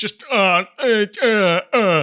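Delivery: slow, drawn-out, uncontrollable blubbering sobs. Narrating a man's reaction, imitating uncontrollable sobbing. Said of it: "uncontrollable sobbing noises".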